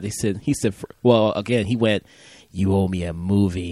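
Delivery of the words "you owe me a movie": deep, low, angry growl. Retelling what a fuming friend said after the movie: imitating a deep angry Clint Eastwood voice. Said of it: "this really deep, angry Clint Eastwood voice".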